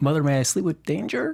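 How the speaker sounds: rising question-like inflection at the end. Trying out a movie title with more of a questioning inflection on the title. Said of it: "I should hit that with more of a, a questioning inflection".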